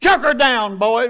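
loud, authoritative commanding voice. Telling a joke story, voicing a command to the eunuchs: authoritative voice. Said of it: "with an authoritative voice".

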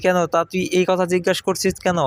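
plain reading voice

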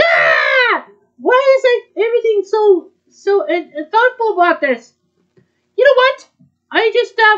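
high, loud frantic outburst. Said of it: "Um, calm down".

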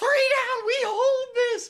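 put-on very high, shrill, excited scream. Recounting a miracle moment in a match, retelling screaming at teammates. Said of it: "And I am screaming at my team".

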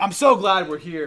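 put-on frightened voice. Retelling Peter's words on the mountain: imitating Peter speaking in total fear. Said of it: "out of total fear".

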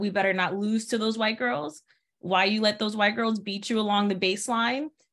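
ordinary talk

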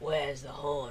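very loud, grumbled goblin voice. The lead goblin confronts the player: grumbling goblin voice. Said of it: "grumbles the lead goblin".

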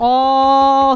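emphasis on "all". Speaker addressing a room full of listeners, stressing the word all. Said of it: "I cannot stress that word enough".

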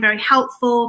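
ordinary talk

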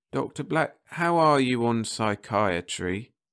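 strained, doubtful voice. A character puts an unexpected question to the doctor: strained, doubtful voice. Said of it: "in that strained, doubtful voice".

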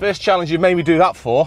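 winded gasping, breathless, very loud and high. After rushing to the pub for a challenge, talking to Jake, out of breath. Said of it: "Out of breath".

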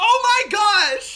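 loud yelling, shouting. Reacting to another player's mistake in the game: yelling. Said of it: "Now you're yelling at me!".

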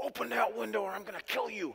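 mad, rough, very high-pitched angry voice. Retelling a threat to a brother who wouldn't let them in: retelling an angry threat. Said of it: "I proceeded to get mad".

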